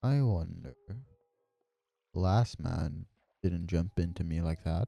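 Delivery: very deep, slow, soft, drawn-out voice. Narrating a voice heard as a character jumps into the water, very deep and slow. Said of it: "you can hear a very deep and slow voice say".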